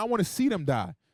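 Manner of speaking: ordinary talk, nothing marked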